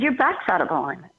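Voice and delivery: ordinary talk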